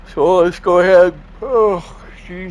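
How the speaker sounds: words swallowed by a big, loud, high yawn. Early morning, speaker hasn't had coffee yet: yawning. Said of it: "I'm still yawning".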